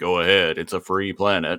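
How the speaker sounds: put-on snarky voice. Retelling a cartoon scene and quoting the character: snarky Rhinox voice. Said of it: "snarky Rhinox is all like".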